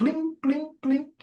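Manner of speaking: very high mock notification-ping chirp.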